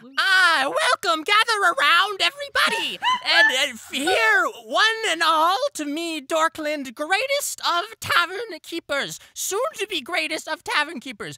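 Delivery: shrill, very high, very loud screeching. Standing on a fountain calling attention to the tavern: screeching to the crowd. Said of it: "would begin screeching".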